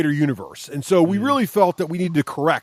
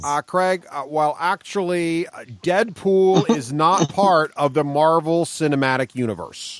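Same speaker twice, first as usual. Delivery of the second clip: normal talking voice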